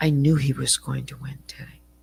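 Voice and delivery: ordinary talk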